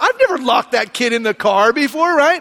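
usual speaking voice

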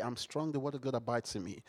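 said very softly. Speaker shows how they repeat a phrase to themselves, very quiet. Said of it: "I start saying it very quietly".

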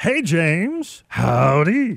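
put-on cartoon voice with howdy drawn out. Greeting a caller by name, joking: Fat Albert voice. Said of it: "Sound like Fat Albert did, didn't I?".

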